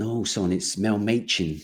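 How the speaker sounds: put-on slow, drawling northern English accent. Retelling a phone call from Mel Machin, Mel Machin impression. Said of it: "I try his accent actually".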